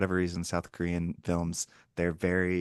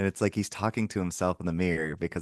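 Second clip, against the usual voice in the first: ordinary talk, nothing marked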